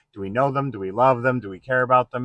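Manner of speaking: plain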